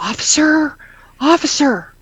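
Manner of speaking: half-whispered, pitched very high. Retelling calling to a police officer at her back door: retelling a half-whisper. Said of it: "I'm whispering".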